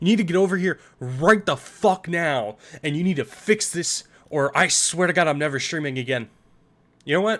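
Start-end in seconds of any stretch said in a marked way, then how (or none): 0.0-5.3 acted, fake furious voice. Streamer urging viewers to save someone's streak, mock-furious demand. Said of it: "I gotta get the right emotion".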